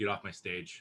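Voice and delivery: calm, quiet, unbothered, offhand, dismissive tone. Retelling how a performer calmly ordered someone off stage: imitating a calm dismissal. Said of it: "he was so calm about it too".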